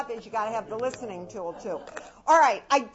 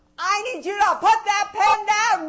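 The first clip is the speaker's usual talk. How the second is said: rising, swelling louder word by word; 7 semitones higher, 6 dB louder than usual. Showing a typical command to kids, getting louder through the sentence. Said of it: "It gets louder and louder".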